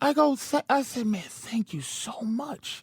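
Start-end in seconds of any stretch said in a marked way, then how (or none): 1.1-2.8 whispered, hushed, breathy sarcastic tone. Retelling what you said to a man who charged you for a battery, retelling sarcastic thanks.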